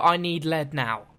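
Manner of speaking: put-on childlike voice. Demonstrating what a child will say, in a young child's voice. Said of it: "this is what she sounds like. A child will go".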